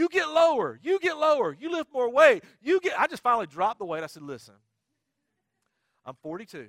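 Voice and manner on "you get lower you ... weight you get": very high, very loud, shrill scream. Retelling a trainer yelling orders during squats: imitating a trainer screaming. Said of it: "she's screaming at me".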